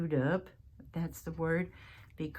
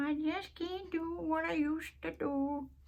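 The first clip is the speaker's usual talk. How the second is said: put-on elderly voice, very high and slow; 11 semitones higher than usual. Quoting what older people say, imitating an old person. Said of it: "I don't know why I'm using that voice".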